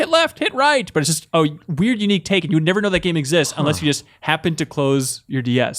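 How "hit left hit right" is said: very high screaming voice. Describing a DS game where a character shouts directions, imitating him screaming. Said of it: "he's like screaming like".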